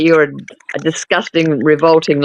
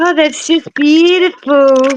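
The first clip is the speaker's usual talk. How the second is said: put-on mimicked toddler voice, higher; 11 semitones higher than usual. Mocking a video's child line, imitating a three-year-old. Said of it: "I don't think a three-year-old can say beautiful".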